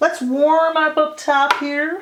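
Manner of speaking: very drawn-out puppet-style voice. Doing makeup on camera, narrating the next step: sounding like a Muppet. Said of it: "I just sounded like a Muppet".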